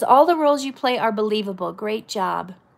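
normal talking voice

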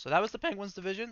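voice cracking. Wrapping up a division rundown, speaker's voice cracks mid-sentence. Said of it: "Voice crack".

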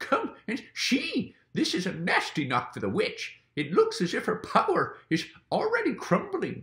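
gleeful, delighted cry, very high and swooping. Mr. Beaver, almost dancing with delight, calls the others to come see. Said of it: "cried Mr. Beaver, who was almost dancing with delight".

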